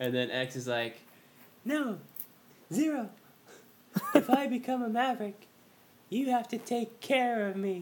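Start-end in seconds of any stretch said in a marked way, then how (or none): 1.6-7.8 put-on girly voice pitched very high. Recounting a story scene where X answers Zero: girly-voiced X impression. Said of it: "X has, like, a girl's voice".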